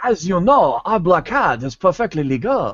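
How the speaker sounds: put-on caricatured Chinese accent. Asked to repeat a funny remembered line, doing a caricatured Chinese accent. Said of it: "caricatures of Chinese people".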